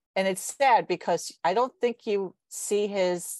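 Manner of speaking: ordinary talk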